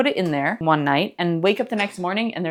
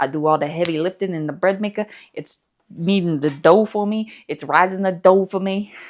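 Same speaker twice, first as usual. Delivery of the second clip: put-on accent, slowed down on "kneading". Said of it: "can't stop talking in this accent".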